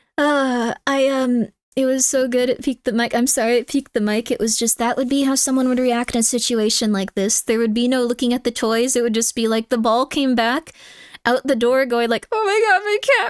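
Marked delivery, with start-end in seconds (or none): 12.3-13.3 mock frantic, panicked wailing, high-pitched. Imitating someone running back inside panicking: imitating someone having a breakdown. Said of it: "having a mental breakdown".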